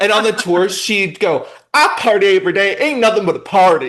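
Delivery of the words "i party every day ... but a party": put-on country accent coming through. Quoting how she used to say it on tour, in a country accent. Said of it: "she would say it like like in her country accent".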